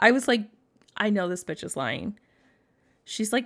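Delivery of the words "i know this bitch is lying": ordinary talk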